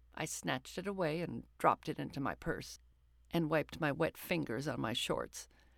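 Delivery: ordinary delivery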